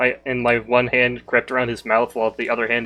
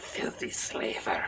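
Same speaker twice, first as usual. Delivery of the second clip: very hushed, threatening whisper, close up; 2 semitones lower, 13 dB quieter than usual. Stabbing a fallen enemy and whispering into his ear: whispering in character. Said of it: "I'm just going to whisper into his ear".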